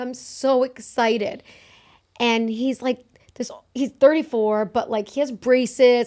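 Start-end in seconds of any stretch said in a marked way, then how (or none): none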